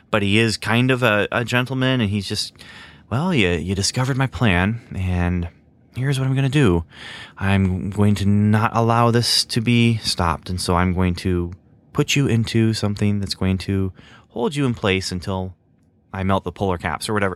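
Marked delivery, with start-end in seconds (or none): 3.1-17.1 put-on slow, understated villain voice. Describing a villain character's scene, imitating Schubert, slow and low-key. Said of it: "He speaks slowly".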